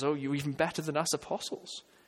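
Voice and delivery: ordinary talk, nothing marked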